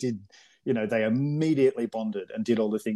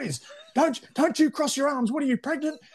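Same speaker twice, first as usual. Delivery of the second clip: mock shouting, much higher. Retelling how a man yelled at the boys doing laps in the pool, imitating someone yelling. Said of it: "and he's yelling at them".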